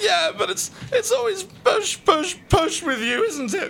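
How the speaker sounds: very high, tearful, crying voice. In an acted scene, the teased one answers the self-declared devil, crying. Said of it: "There's no need to cry".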